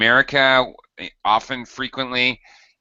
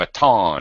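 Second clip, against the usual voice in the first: baton said the French way, stress on -ton; 5 semitones lower than usual. Discussing the french word baton: stress on second syllable of baton. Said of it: "like to have second second syllable stress".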